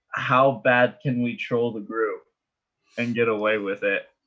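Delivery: normal talking voice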